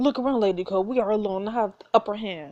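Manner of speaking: ordinary talk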